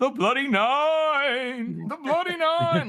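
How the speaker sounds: high, slow, ghostly shout, "nine" stretched out hauntingly. Imitating how Pacey shouts a name when characters shout it: imitating Pacey shouting like a ghost. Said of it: "Pacey does a great job at doing this".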